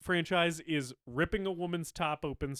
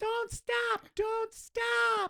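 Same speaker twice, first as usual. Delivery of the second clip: put-on very high, shrill, repeated kid's yelling. Mocking an annoying line delivery, retelling Billy's yell. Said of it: "when he's just yelling".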